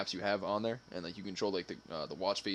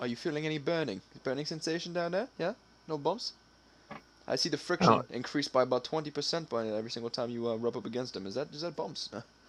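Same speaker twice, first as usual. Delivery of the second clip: put-on British accent, higher and slower; 6 semitones higher than usual. Imagining the device speaking to its user, in a British accent. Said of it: "imagine it was just like in a British accent".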